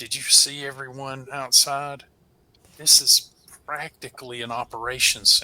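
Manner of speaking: speaking quietly under the breath. Leaning in toward another character to remark privately: speaking under the breath. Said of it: "under my breath say".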